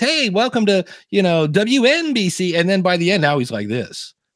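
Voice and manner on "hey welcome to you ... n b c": high, very slow radio announcer voice. Showing how a radio host sounded in early recordings, in an early Howard Stern voice. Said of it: "it doesn't sound like Howard Stern. He sounds like this".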